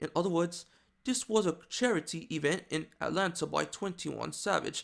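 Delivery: put-on, attempted British accent. Speaker shows how someone's mom talks: british accent. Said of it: "I'm just trying to do a British accent".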